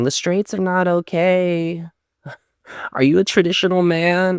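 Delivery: put-on very high condescending voice, drawn-out okay. Imitating a man from a TikTok video: imitating a condescending tone. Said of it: "this guy's tone of voice being condescending".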